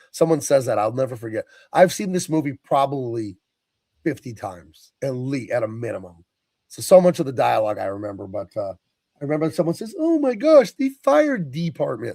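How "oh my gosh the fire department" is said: very high, squeaky cartoon frog puppet voice. Retelling a line from a movie: Kermit the Frog voice. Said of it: "like they're Kermit the Frog".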